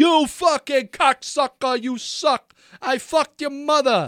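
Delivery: shrill, rowdy fake New York accent, high pitched. Speaker joining a rowdy crowd, heckling in a put-on new york accent. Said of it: "I couldn't help but do like a New York accent".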